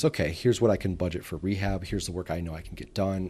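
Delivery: ordinary talk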